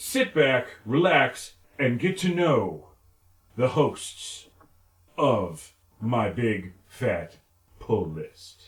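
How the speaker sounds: slow, halting, choppy, pausing between word pairs. You invite listeners to get to know the hosts, with Shatner-like pausing every two words. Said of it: "I like the pausing in between".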